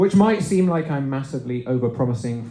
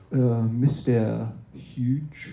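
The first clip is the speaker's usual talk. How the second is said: seductive, sultry put-on French accent; 3 semitones lower, 4 dB quieter than usual. Teaching a group of twelve-year-olds, slipping into a sultry French accent. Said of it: "I get in a sultry French accent".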